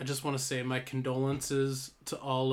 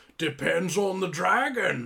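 put-on Scottish actor voice, higher and louder; 5 semitones higher, 5 dB louder than usual. Quoting a line from a film: Sean Connery impression. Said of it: "That's my Sean Connery impression".

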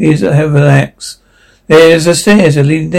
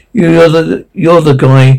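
normal talking voice

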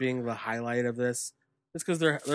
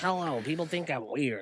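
put-on rat voice, quieter; 3 semitones higher, 4 dB quieter than usual. Imitating a wrestler who has a rat voice. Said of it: "he has the rat voice".

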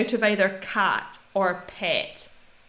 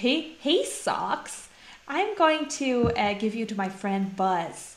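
attempted, put-on American accent; 4 dB quieter than usual. Speaker acts out a message given to socks: attempted American accent. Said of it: "That's my best American accent".

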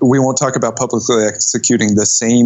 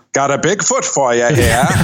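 put-on thick Maine accent; 2 semitones higher than usual. Imagining the proprietor of a taxidermy collection talking, in a thick Maine accent. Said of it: "having a delightfully thick Maine accent".

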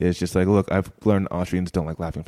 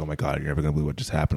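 all in a fluster, worked up, flustered; 4 semitones lower, 3 dB quieter than usual. Retelling a date arriving after a stranger greeted her: imitating a flustered date. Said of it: "so flustered and she's like".

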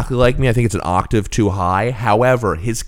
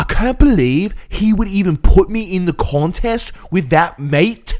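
put-on obnoxious, higher Scouse accent, every word stressed; 8 semitones higher than usual. Mocking how an accent sounds on a show, in an obnoxious english accent. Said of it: "the most obnoxious English accent".

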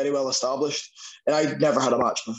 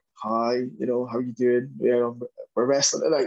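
put-on sheepish voice. Retelling going up to a wrestler before a show: retelling own sheepish greeting. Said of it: "I go up very sheepishly".

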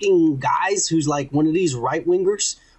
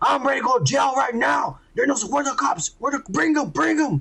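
put-on yelling, higher pitch; 7 semitones higher than usual. Retelling a fight video, imitating a man walking around: imitating a man yelling. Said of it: "walking around yelling".

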